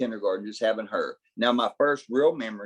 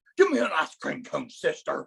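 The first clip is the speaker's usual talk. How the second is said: rough, raspy, high character voice with big swoops; 5 semitones higher than usual. Retelling ordering ice cream at a drive-thru: Hulk Hogan voice. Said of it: "It's Hulk Hogan".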